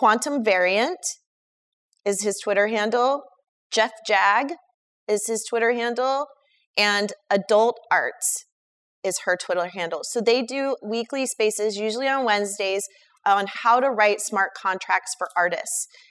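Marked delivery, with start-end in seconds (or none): 0.0-10.0 said slowly with spaced-out words, dictation style. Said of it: "I'm gonna say it slowly so you can write it down".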